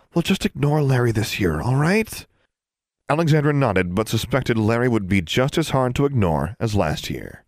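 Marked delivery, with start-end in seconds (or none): 0.2-2.3 whispering, higher pitch. Narrator reads one girl speaking to another while they wait, whispering. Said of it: "Anna whispered to her".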